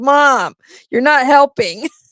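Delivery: put-on fed-up protest, slow and frustrated. Retelling a daughter's words while she was doing the granddaughter's hair: imitating a frustrated daughter. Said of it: "my daughter was getting so frustrated".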